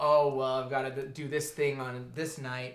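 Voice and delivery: ordinary talk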